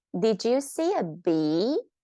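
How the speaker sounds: rising pitch on the word bee. Explaining question intonation with an example, pitch rising on bee. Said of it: "When you ask a question, your intonation goes up. Listen to this".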